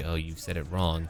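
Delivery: ordinary talk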